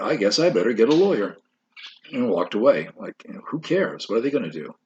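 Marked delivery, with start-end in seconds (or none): 0.0-1.4 play-acted sarcastic, mocking, dismissive throwaway tone. Retelling how he answered a reporter's question: imitating a mocking tone.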